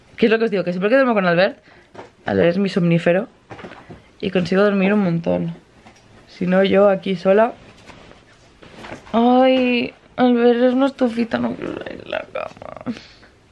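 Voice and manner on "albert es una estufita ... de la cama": drowsy, slow, pitched-up, half-awake sigh. Vlogging right after waking up in bed, sleepy, just woke up. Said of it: "¡Ay, qué sueño!".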